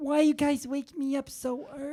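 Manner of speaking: put-on talking-cat voice. Holding a cat and speaking as the cat, woken too early: voicing the cat. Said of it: "don't give the cat a voice".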